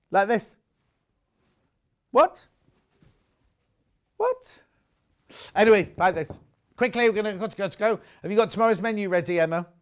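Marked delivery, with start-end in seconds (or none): 2.1-4.6 very high, quizzical bird voice. Explaining they weren't questioning the listener, just doing the birds: bird impression. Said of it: "I was doing an impression of the birds".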